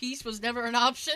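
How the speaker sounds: usual speaking voice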